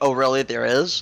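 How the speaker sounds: snarky, dry, sarcastic delivery. Answering a warning that there's another trap down the hall: sarcastic question. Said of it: "just asks kind of sarcastically".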